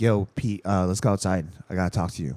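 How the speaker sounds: earnest, serious, sober tone. Retelling what his friend said when pulling him aside, retelling a serious tone. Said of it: "in like a serious tone".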